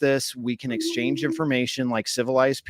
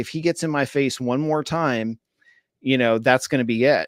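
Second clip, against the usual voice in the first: ordinary talk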